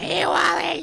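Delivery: very high-pitched voice. Doing an impression of Dina greeting Wally: imitating Dina. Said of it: "I did my best Dina impression".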